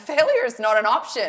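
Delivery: very loud, firm, forceful voice. Retelling a pep talk given after a bad race: retelling own forceful pep talk. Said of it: ""This is what's gonna happen" mode".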